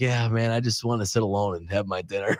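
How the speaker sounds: put-on exhausted sighing voice. Retelling how a quarterback talked about dining alone: imitating Joe Flacco's exhausted sigh. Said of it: "this sort of exhaustion, this sigh".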